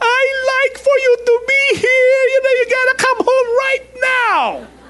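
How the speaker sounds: put-on, very high, panicked, tearful crying plea. Retelling a child panicking over a video call: imitating someone crying out. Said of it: "crying out".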